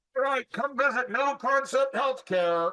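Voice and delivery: pretend yelling. Acting out running outside to promote a company name: pretend yelling. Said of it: "Why are you yelling at me?".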